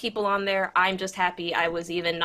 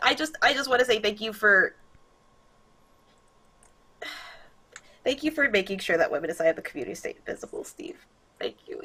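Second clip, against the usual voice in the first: tearful, crying through the words; 2 semitones higher than usual. A streamer thanking Steve on stream, crying while talking. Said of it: "you don't have to close up on me crying".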